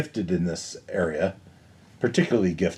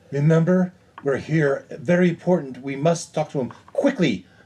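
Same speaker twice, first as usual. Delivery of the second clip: urgent, pressing, insistent, high-pitched voice; 8 semitones higher, 3 dB louder than usual. Voicing a character urging the guards: urgent. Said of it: "provide some urgency".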